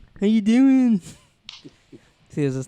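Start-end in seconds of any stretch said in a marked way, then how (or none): 0.2-1.0 raised, nasal voice sounding like a smashed nose. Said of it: "Why does [name]'s nose sound smashed?".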